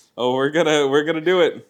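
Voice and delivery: loud, high-pitched, pumped-up energized delivery.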